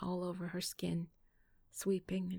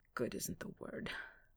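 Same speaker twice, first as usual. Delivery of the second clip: groaned, groaning; 4 dB quieter than usual. Reading a man's reply to a woman, groaning. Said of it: "he groaned".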